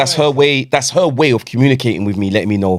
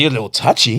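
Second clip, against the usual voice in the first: ordinary talk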